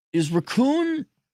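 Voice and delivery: raccoon said high-pitched and puzzled.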